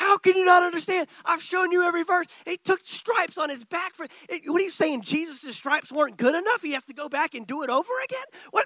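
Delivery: put-on furious ranting yell, loud and high. Retelling screaming at himself while driving home in his truck: reenacting his own angry screaming. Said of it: "I'm like screaming, slamming my steering wheel, just so angry".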